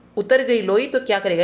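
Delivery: normal talking voice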